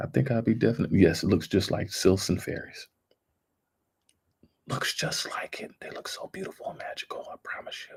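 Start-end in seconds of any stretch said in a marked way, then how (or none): 1.2-8.0 giddy, breathy, hushed whisper. Talking to viewers while showing off something she found: whispering. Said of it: "I don't know why I'm whispering about it".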